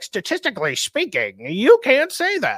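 mocking put-on voice, high-pitched with swooping pitch.

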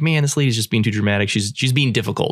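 ordinary talk

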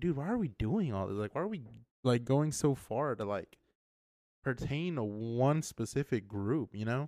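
plain

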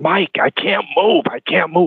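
acted whispering. Retelling lying hurt in the ring during a match: retelling a whisper. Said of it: "I'm trying to whisper".

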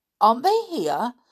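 caught-off-guard tone. Asked where the others are, a man replies; seeming surprised. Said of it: "seeming surprised".

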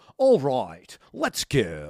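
drawn-out video game voiceover callout voice. Retelling how a kid from France greeted him: imitating Dance Dance Revolution announcer. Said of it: "like, the voiceover guy on the game".

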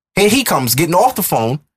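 usual speaking voice

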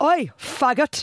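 put-on Geordie accent. Retelling a boy shouting from a passing car, imitating a Geordie accent. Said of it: "a lovely impression there. Of a Geordie".

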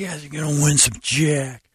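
weird, creepy coach voice. Keeping up a joke bit, the speaker addresses the team in a creepy coach voice. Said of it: "like a creepy coach".

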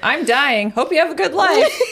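put-on acted, blunt, offhand, high, careless grandma voice. Retelling how grandma shamed her on FaceTime: imitating grandma's careless shaming. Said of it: "She didn't give a fuck. She was like".

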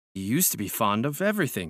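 ordinary delivery

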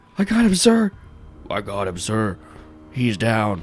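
drawn-out, swooping scream. Voicing a character pinning a skeleton down: character screaming. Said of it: "he's just, like, screaming".

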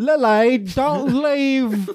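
put-on strong British accent. Voicing a character in an imagined film cast: heavy British accent. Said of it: "not a subtle accent".

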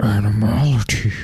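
fighting-game announcer-style call-out. Imitating the Mortal Kombat announcer calling out a move, in Shao Kahn voice. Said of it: "What was that?".

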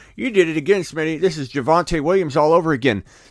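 sore, griping complaint with accusing tone. Speaker acts out someone blaming him over a draft pick; imitating Bob complaining. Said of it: "Bob's going to come to me in week 4".

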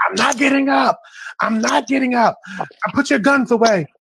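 high-pitched, loud, desperate scream.

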